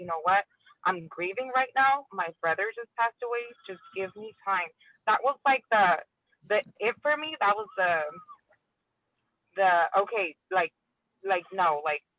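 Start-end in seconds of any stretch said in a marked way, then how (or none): none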